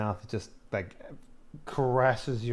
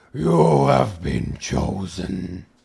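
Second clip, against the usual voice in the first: very loud, very slow, booming, creaky monstrous rasp; 8 dB louder than usual. Voicing a creature that grips a player: inhuman creature voice. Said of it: "with the most, like, inhuman voice possible".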